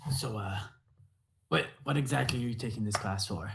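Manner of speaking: hushed, half-whispered voice. In a role-play, leaning over to someone during class, half-whispering. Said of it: "I am whispering".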